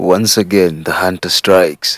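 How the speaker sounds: snickering in a roaring voice. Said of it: "sniggered with his roaring voice".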